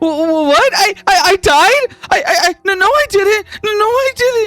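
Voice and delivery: put-on very high, very slow tearful little-girl stammer. Voicing a little girl who learns she died: little girl about to cry. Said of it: "Willow begins to cry".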